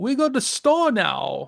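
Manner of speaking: bad, slow, sing-song put-on Cajun accent. Imitating how a character says a line: Becky's bad Cajun accent. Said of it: "she sounds like she's got some broken English native thing".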